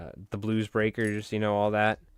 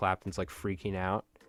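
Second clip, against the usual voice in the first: normal talking voice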